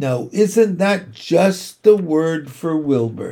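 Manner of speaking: usual speaking voice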